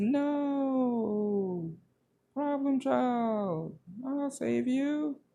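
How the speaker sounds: mocking, high-pitched, slow and drawn out.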